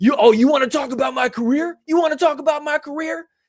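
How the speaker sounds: very high, shrill, screeching scream. Retelling what a woman in the crowd screamed at him: imitating her screaming. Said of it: "just screaming at me like this".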